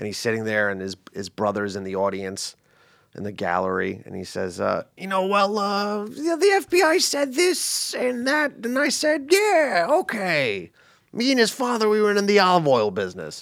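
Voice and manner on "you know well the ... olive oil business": high, swooping, sing-song character voice. Retelling a courtroom scene from a film: The Godfather character voice. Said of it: "he kinda talks like this".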